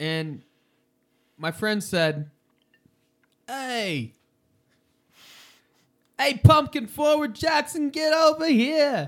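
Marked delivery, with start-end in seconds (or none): 3.5-9.1 very high, slow, clumsy bad New York accent. Retelling what a friend called out when the speaker was late to class: bad New York accent. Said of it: "He had a really bad New York accent".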